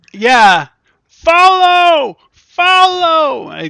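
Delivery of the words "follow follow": very high-pitched, very loud yelling. Yelling at a driver to follow a creature: in-character yelling. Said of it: "are you yelling at him to do something".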